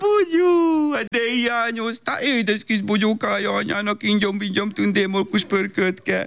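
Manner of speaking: put-on gushing, high, cooing baby talk.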